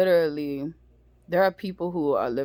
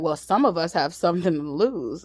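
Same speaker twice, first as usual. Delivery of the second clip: normal talking voice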